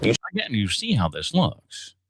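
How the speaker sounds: deep, drawn-out TV interviewer tone. After playing the real clip, the speaker repeats the line in a Chris Hansen impression. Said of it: "I just did the same thing again".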